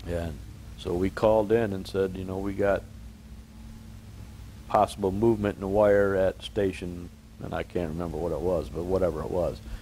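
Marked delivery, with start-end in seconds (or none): none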